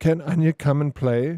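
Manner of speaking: high, giggly voice, giggling through the words. Retelling what she said when he went into her room, imitating a giggly high-pitched voice. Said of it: "giggling and in a high pitched voice said".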